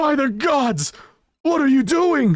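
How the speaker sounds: very high, shrill, loud shouting yell. Voicing a punched prisoner crying out in pain: prisoner shouting loudly. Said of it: "shout really loudly".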